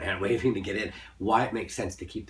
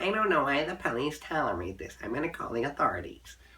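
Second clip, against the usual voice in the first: put-on prim, prissy old lady voice, pitched high; 7 semitones higher than usual. Teasing the other speaker about how they sounded, old lady with a lorgnette voice. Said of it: "like an old lady with lorgnette saying".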